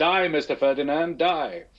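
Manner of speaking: Serbian-accented speech. Speaker tries an accent they call hard for the other speaker: Serbian accent impression. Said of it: "my best Serbian impression is".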